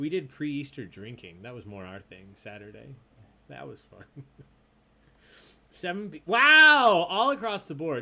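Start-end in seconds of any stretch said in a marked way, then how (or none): 6.2-8.0 very loud, high yell with "wow" stretched out. Announcing tonight's answer results to the players, yelling. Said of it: "Sorry for yelling".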